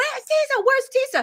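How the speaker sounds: acted-out, very high screams of a crowd. Recalling a mob of men coming for her, imitating men screaming. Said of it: "all those men screaming".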